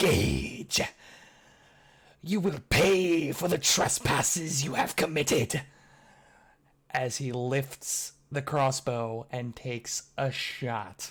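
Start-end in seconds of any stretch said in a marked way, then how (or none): 0.0-5.6 loud, hissing voice with broken speech. A game master voices a humanoid threatening a character: hissing, broken Common. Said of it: "in like hissing, broken common".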